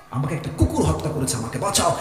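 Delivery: plain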